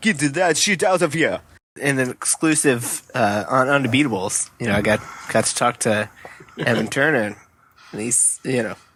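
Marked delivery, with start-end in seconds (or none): 0.0-1.4 put-on French accent, exclaimed. Retelling a blocked shot caught on audio, imitating a french accent. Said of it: "him in a French accent going".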